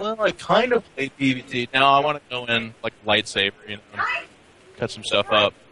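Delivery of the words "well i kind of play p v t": high, slow, meek, unsure hedging. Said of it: "I don't wanna go into it like".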